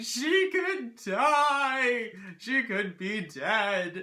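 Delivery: put-on wailing, sobbing panic, high, loud, very slow, "die" drawn out. Retelling crying in a heap before the speaker's mother got home: imitating sobbing panic. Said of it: "I'm literally on the ground in a heap crying".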